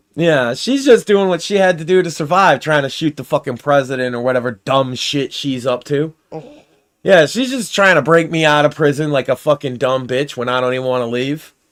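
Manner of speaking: normal talking voice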